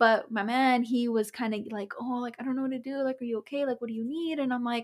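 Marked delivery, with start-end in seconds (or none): 2.0-4.4 mock frantic, fast, rattled-off, freaking-out fretting. Retelling how the partner reacted to the illness: imitating someone freaking out. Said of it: "my man's freaking out".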